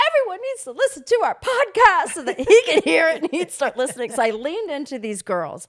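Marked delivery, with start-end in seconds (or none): 0.1-4.1 play-acted, very high, loud, pointed, projecting voice. Retelling talking at a bar so a nearby guy hears: imitating own loud talking. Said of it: "I'm talking loud".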